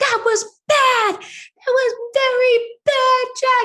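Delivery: very high, crying, tearful scolding tone. Retelling scolding a child who said he hated you, reenacting crying while scolding. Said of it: "And I'm like crying".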